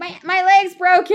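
put-on high, loud, whiny kid voice. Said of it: "This kid's whining".

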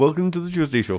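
put-on Indian-sounding accent. Trying out accents, the speaker repeats a greeting the listener hears as an Indian-sounding accent. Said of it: "Still Indian".

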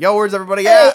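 very high, loud cat-like crying call. Imitating the cat calling out for everyone in the house: imitating a cat crying out. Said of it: "kinda cry out and be like".

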